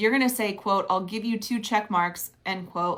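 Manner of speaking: usual speaking voice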